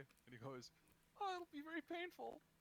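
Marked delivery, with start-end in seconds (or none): 1.2-2.3 very high, pushed-up cartoon character voice. Acting out a cartoon character's answer to a question: Mickey Mouse voice. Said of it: "I don't know why I went for Mickey Mouse".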